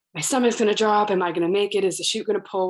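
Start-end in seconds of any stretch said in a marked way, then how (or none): none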